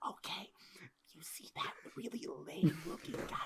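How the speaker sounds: very quiet, breathy, hushed whisper. Pointing someone out in character to a companion, whispering. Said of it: "I whisper into his ear".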